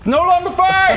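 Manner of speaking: very high, loud panicked shout from a distance.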